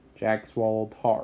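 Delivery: plain reading voice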